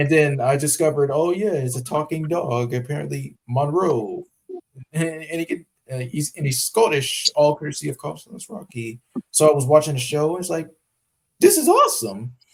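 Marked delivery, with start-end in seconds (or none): 11.4-12.3 very high cartoon-mouse squeak with a voice crack. Telling about watching a show with a talking scottish dog, voice cracking high. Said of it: "you put a Mickey Mouse voice after".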